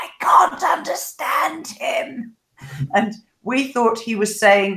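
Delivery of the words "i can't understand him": slow, higher-pitched hushed whisper. Retelling how the bow pair reacted to the coach: imitating someone whispering. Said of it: "And she whispers".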